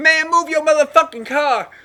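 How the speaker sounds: shrill, very loud, high-pitched yell. Retelling what the bus driver said after the window came down: imitating a driver yelling. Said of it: "like that".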